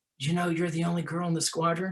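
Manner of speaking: secretive, hushed, confiding stage whisper. Retelling what a squadron commander said in his office: imitating a half-whisper. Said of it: "he whispered to me in his office".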